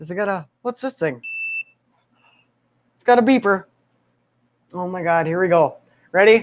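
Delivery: nervous, scared, frightened-sounding voice. Testing a vibrator and its beeper before getting started: scared. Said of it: "I'm so scared right now".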